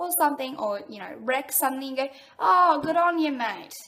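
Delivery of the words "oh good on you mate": loud, sarcastic, falsely approving tone. Showing how the phrase is said when a mate wrecks something: sarcastic. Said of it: "it's just sarcastic".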